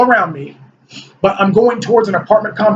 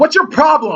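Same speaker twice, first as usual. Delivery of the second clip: mock, pitched-up, accusatory scolding; 6 semitones higher than usual. Retelling a dream where a lady scolds a maintenance man: imitating a woman scolding. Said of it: "She starts scolding him".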